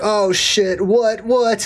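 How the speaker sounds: very slow, nervous, paranoid, startled reaction. Retelling kids' reaction at the movies when she asks them something, imitating paranoid kids. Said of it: "And they're all paranoid".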